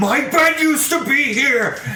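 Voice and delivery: high-pitched laughing shout.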